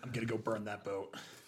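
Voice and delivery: resolute, steely, hard-set, determined tone. Voicing a character who decides to burn a boat: determined voice. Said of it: "a steely look in his eyes and goes".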